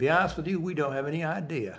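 put-on southern drawl. Speaker quotes a man at a Parkinson's hospital answering her, imitating a southern drawl. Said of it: "in his southern drawl".

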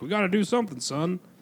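put-on rallying weekend dad voice. Joking about fathers with their kids for the weekend: imitating an absent father. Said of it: "normally absent fathers who have their kids for the weekend and are like".

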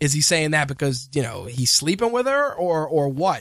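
plain

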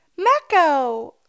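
enthusiastic. Performing the network name after being asked: enthusiastic. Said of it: "say it more enthusiastically".

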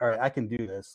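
ordinary talk, nothing marked

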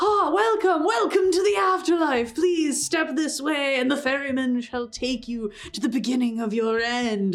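cheesy canned patter. Voicing a tiefling greeter who waves guests toward the ferryman: dumb canned patter. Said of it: "very dumb canned patter".

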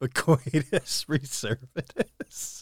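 soft, slow giggle through the phrase.

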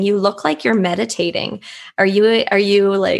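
put-on male laughter, mocking and teasing. Retelling what older gentlemen said behind them, imitating them laughing and poking fun. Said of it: "they were laughing and saying".

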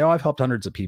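normal talking voice

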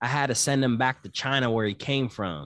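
normal talking voice

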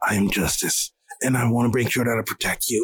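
low, slightly raspy hero voice, changed on purpose. Speaker recounting how a hero talked to a little kid, a little raspy. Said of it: "it was just like a little raspy".

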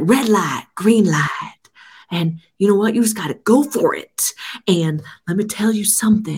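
rambling, cryptic movie-star musing. Retelling what an interviewee says: Matthew McConaughey impression. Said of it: "why does everybody have a Matthew McConaughey?".

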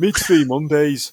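impression voice, loud, slow and drawn out. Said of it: "I'll try and do [name]".

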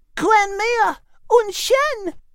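very high, slow, drawn-out exclamation. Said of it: "he exclaimed at seeing".

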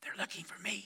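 put-on young voice, soft, hushed whisper. Retelling a joke where a four-year-old answers the phone: imitating a child's soft whisper. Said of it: "still whispering, the young voice replied just with a little soft giggle".

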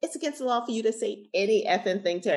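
high-pitched scream. Recounting screaming at a man on Atlantic Avenue over a nine-year-old, retelling a scream. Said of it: "And I'm screaming".

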